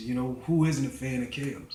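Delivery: ordinary talk, nothing marked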